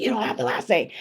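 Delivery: normal voice. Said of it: "That's literally how I talk".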